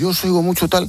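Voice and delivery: high-pitched, strong Aragonese accent.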